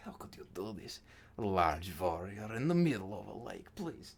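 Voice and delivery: grumbling, complaining voice to oneself. Game master voicing a woman complaining to a large warrior, muttering under her breath. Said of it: "she's muttering under her breath".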